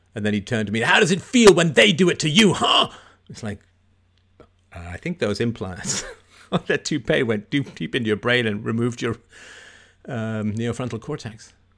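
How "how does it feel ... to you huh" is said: put-on man's screaming, much higher and louder. Recounting a classroom incident, quoting the man who turned on the speaker: retelling a man's screaming. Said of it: "he was screaming at everyone".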